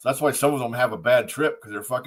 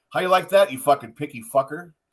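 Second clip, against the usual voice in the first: acted frustrated, fed-up jeering tone; 3 semitones higher, 3 dB louder than usual. Retelling a player confronting his coach after a game: imitating Kirk frustrated. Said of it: "He was fucking frustrated".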